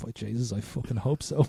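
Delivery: faint, hushed, put-on weak croaky voice. Retelling a story, the speaker gives a shot man's answer, imitating a faint, croaky voice. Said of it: "says in a faint, croaky voice".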